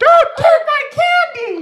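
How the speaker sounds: put-on acted, high, stretched-out girlish shriek. Recalling someone taking their candy as a kid, speaker reenacts their high-pitched scream. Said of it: "I screamed like a girl".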